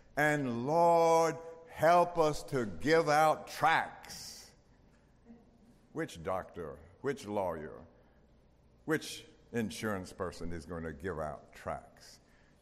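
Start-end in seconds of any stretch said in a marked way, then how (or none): 0.2-4.5 put-on very slow, deep, drawling Southern accent. Retelling a doctor's words at a prayer meeting: deep Southern drawl. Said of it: "with this deep Southern drawl would say".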